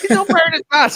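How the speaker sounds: acted man's shouting. Retelling the man shouting to other people: imitating a man shouting. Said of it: "kept shouting at other people about me".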